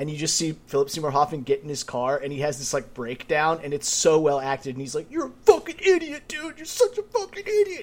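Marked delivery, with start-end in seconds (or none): 5.1-7.8 mock very high, tearful, crying self-reproach. Describing a film scene, the speaker acts out a man's breakdown in his car, imitating someone crying. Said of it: "He's crying, like punching his steering wheel".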